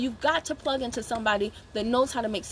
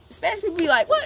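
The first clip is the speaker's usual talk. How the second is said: ordinary talk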